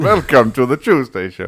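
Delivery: Transylvanian-accented speech. Trying out accents for the show's opening welcome, in a Transylvanian accent. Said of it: "I almost went into Transylvanian".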